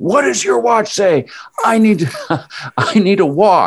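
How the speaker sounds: mock screaming. Retelling what the listener kept screaming at the speaker, imitating someone screaming. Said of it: "you just kept screaming".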